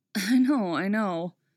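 tired, weary, worn out. Oliver answers Dinah, who reminds him how proud he is: weary. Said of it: "Oliver says wearily".

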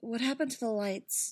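plain

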